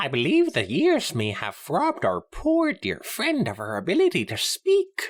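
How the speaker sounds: very high, loud, swooping sing-song character voice. In a roleplay scene, the speaker voices a character in the classic Luna voice. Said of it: "you're doing the the classic Luna voice".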